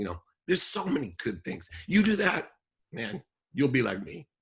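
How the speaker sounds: choked up, throat catching, high and swooping. Giving heartfelt advice to listeners, the speaker is choking up. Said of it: "I'm choking up".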